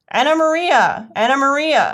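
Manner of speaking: very high, loud, squeaky rat cry. Narrator reading the rat's line in a story: squeaking rat voice. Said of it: "squeaked the rat".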